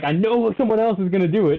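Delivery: high-pitched scream of disbelief. Retelling a glitch while adding a player: retelling own screaming. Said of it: "I'm, like, screaming".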